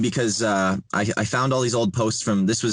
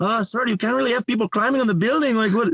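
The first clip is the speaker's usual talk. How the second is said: put-on panicked voice, higher; 13 semitones higher than usual. Retelling the maintenance guy's complaint about climbing: imitating someone freaking out. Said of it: "he's kinda, like, all freaking out".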